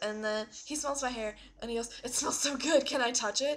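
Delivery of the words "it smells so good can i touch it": put-on creepy clown voice, higher and louder. Retelling what a clown said up close: imitating a creepy clown. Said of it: "he's, like, all creepy".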